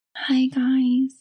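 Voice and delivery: fake babyish voice. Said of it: "Her fake voice, like her baby voice".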